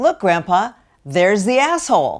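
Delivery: put-on high, loud, carrying child's shout. Telling a seminar story of a five-year-old calling to his grandpa in line, retelling a very loud call-out. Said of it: "in a very loud voice".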